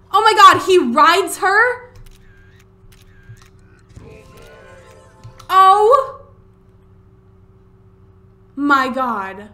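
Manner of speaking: screaming at full volume, very loud, high, drawn-out. Streamer reacting to what happens to the horse in the game, screaming. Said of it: "Sorry I'm screaming".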